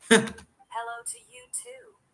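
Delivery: synthetic robotic machine voice, very high. A character greets a double who shares their face, sounding like an AI. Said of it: "You sounded like an A I".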